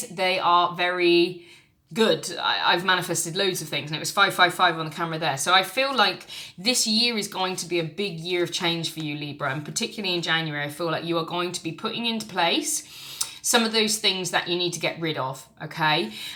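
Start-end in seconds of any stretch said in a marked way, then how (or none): 9.5-10.6 talking really fast, rapid-fire. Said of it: "I'm talking really fast".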